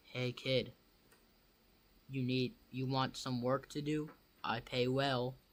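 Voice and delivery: low, rough, gruff voice. Game master voicing a hooded stranger offering a kid paid work, in a low gruff voice. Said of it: "He then speaks in a low, gruff voice".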